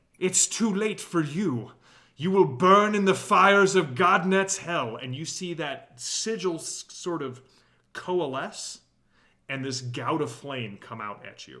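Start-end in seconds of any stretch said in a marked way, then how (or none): 0.2-5.0 very loud, high, full-throated screaming. Voicing a foe who casts hellfire at a player: screaming.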